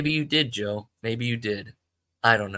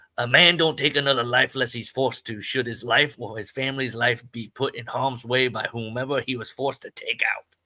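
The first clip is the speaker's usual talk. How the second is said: put-on old-movie character voice. Reading a story aloud, voicing a character: George Kennedy voice. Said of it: "a George Kennedy from, like, Cool Hand Luke".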